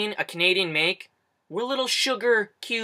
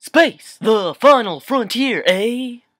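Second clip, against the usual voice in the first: very slow, loud, grand, every word stretched out; 3 semitones higher, 8 dB louder than usual. Joking about celebrities saying a letter at the end of everything, do a William Shatner impression. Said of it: "Have you heard William Shatner say A?".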